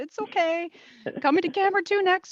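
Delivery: steady, calm voice pitched very high. Imitating the other speaker's words to an anchor: imitating a calm voice. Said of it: "it's that calm voice".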